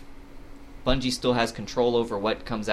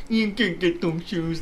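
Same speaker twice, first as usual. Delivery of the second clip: dopey, dim-witted, high goofy voice; 6 semitones higher than usual. Speakers recall a man who barely talked, imitating his dumb voice. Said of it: "That's what he would talk like".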